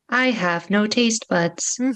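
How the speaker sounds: mournful, sad robotic voice. Voicing what an automaton says, in a sad robot voice. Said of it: "says in sad robot voice".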